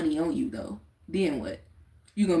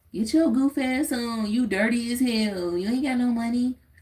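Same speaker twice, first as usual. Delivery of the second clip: pitched-up, condescending mock scolding jabs; 6 semitones higher than usual. Quoting what he used to hear said to a broke man, imitating the scolding. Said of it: "I just know what I used to hear".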